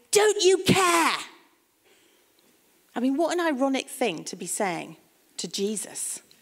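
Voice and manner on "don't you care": raised, resentful, self-pitying, irritable cry. Retelling Martha storming into the lounge: Martha crying out resentfully. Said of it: "she cries out with self-pity and resentment and irritability".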